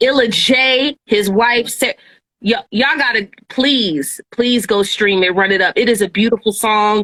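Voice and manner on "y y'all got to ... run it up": ordinary delivery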